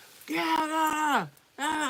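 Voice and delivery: drawn-out, loud concert-style yell. Retelling a concert where a man behind them yelled: imitating a concert-goer yelling. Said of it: "but he yelling".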